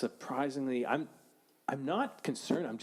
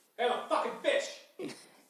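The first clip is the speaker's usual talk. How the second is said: very slow, very high, squeaky, drawn-out fish voice; 12 semitones higher than usual. Giving a fish impression after being asked for one: fish impression. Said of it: "here's my fish impression".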